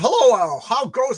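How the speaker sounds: high, slow, cracking, breaking voice. Reading a viewer's greeting aloud to a co-host, voice cracking. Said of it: "my voice just cracked".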